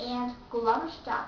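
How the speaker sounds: ordinary talk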